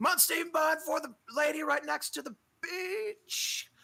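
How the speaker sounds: very high shout from a distance. Game master voices him heading to the kitchen: shouting from the kitchen. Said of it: "you can kind of hear him shouting".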